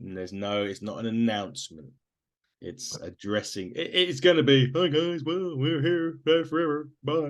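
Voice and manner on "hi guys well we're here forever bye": put-on cartoon bear voice, pitched up. Joking about what Triple H will say Friday: Yogi Bear voice as Triple H. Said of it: "my Yogi Bear voice that sounds like Triple H".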